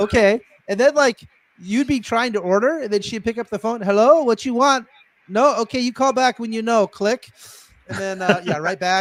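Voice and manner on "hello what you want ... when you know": put-on yelling. Recalling a restaurant, the speaker imitates a woman yelling into the phone. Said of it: "she would just like yell at you".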